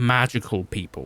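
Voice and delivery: ordinary delivery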